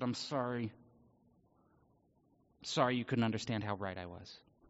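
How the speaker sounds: put-on gritted-teeth voice. Acting out a hypothetical apology to teachers: mock-apology through gritted teeth. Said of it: "gritted teeth and said".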